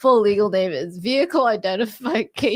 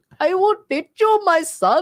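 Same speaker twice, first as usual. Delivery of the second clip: unconvincing fake Indian accent, very high pitched; 10 semitones higher, 4 dB louder than usual. Correcting the other speaker's attempt, redoing the line in a put-on Indian accent. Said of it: "That's not the, the accent".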